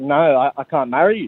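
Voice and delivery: ordinary talk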